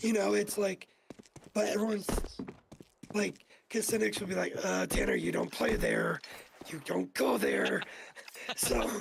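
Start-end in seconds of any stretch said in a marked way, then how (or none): 4.9-7.8 pissed-off, creaky, swooping angry grandma voice. Retelling what Cynic says to Tanner, as a pissed-off grandma. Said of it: "making Cynic sound like a pissed off grandma".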